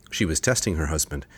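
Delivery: ordinary delivery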